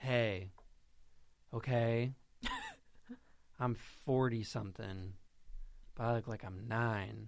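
put-on voice, pitch swooping up and down. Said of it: "here's my [name] impression".

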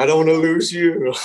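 acted crying, weepy, high and tearful pleading. Retelling his partner's words while hanging over a cliff, imitating her crying. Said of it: "And she's crying".

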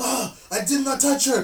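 shrill angry rant. Retelling a scene from The Room where a character rants: imitating an angry rant. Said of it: "having a rant, like, a full-on rant".

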